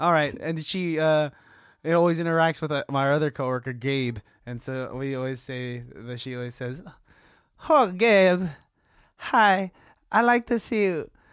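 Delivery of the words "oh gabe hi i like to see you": put-on Persian accent, high and slow. Telling how a persian woman always greets your coworker, say her greeting, imitating a persian woman's accent. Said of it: "I've been working on her accent".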